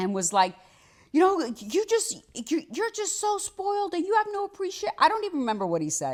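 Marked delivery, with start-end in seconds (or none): 1.1-4.9 put-on very high, top-of-the-lungs screaming rant. Retelling a man's outburst at dinner in front of an aunt, imitating a man screaming. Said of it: "started screaming at the top of his lungs".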